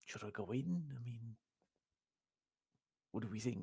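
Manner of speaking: hushed half-whisper under the breath. Half-whispering back while he has his head stuck in a book: half-whispering under breath. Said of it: "I'm literally whispering back under my breath".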